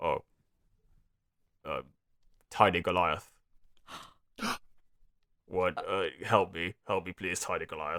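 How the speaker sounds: soft, heavily mumbled, barely formed words. Game master voices the man found lying on his front, mumbled. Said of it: "you hear a very kind of like mumbled".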